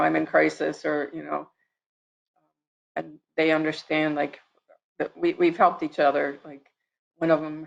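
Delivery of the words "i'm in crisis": ordinary delivery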